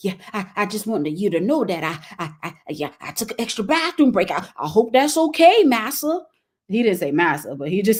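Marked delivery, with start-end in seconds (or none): 0.0-6.3 play-acted scared, timid, halting nervous stammer. Retelling how a coworker asked about a bathroom break: imitating a scared nervous coworker. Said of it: "why are you so scared and nervous".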